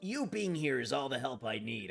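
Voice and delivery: sudden, cartoonish anime fighter character voice. Answering a game character named Break: Krillin from Dragon Ball voice. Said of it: "started sounding like Krillin from Dragon Ball".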